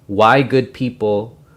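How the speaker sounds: plain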